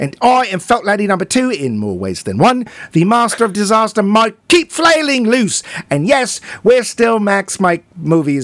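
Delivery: fake Scottish accent held throughout. A co-host introduces himself at the start of the show, in a put-on accent. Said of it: "You're not going to do that accent the whole time".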